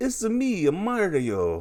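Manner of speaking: very high cartoon voice, pitch swinging up and down. Explaining what voice people expected an actor to use, doing the Mario voice. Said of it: "he would do like an imitation of that".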